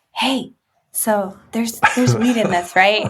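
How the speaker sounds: mock whispering voice. Retelling farmer's market customers asking about the bars: imitating a customer whispering. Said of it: "sort of whispered".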